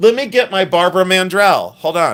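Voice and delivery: high, loud yell, shouted out. Getting up to fetch a ring mandrel: yelling. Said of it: "Why am I yelling?".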